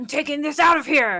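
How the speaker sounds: very loud, gruff creature voice. Speaking as a character telling the others in draconic, gruff voice. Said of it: "you hear him kind of gruffly telling the others".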